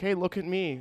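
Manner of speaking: high, pushy, demanding, attention-seeking voice. Retelling how a diner customer waved for service: imitating an attention-seeking customer. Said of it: "It was like".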